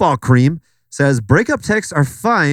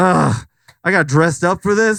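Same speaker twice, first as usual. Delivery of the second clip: let-down grumbling; 4 semitones higher than usual. Imitating a guy who just got broken up with: mock complaining as him. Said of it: "this guy just got broken up with, and he's just like".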